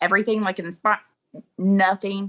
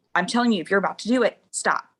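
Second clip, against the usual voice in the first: put-on angry, mad tone. Retelling her own warning to her partner: imitating her own angry warning. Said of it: "Now I'm getting mad".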